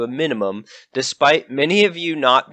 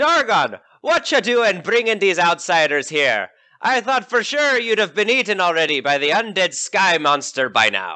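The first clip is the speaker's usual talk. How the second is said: put-on pirate character voice and accent; 5 semitones higher than usual. The storyteller voices a character who addresses Dargon: pirate voice. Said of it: "They're a pirate".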